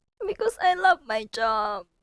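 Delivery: soft, teary voice right on the edge of crying. Asked why, the speaker explains she's about to cry; teary voice. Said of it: "Why are you crying?".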